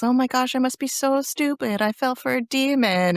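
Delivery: mock mournful, downcast, slow, sad lament. Retelling a scene where Willow is sad: imitating sad Willow. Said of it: "all sad because".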